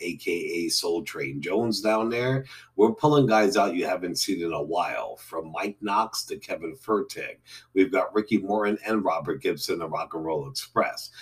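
ordinary delivery

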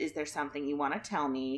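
hushed, very quiet, soft delivery. Retelling how a mother asked her child something: imitating someone speaking quietly. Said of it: "very quietly said".

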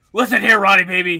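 very loud, bellowing wrestling-promo announcer voice. Doing a wrestling promo addressed to Ron Burgundy, in Hulk Hogan voice. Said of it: "I'm going to do the voice".

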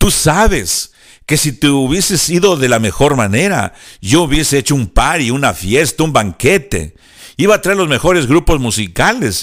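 mock, heavy sarcastic tone laid on thick. Retelling Labán's words to Jacob after Jacob fled: sarcastic Labán voice. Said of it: "esto lo estoy diciendo sarcásticamente".

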